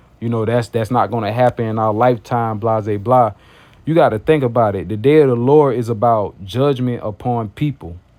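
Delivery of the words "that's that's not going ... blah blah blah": normal talking voice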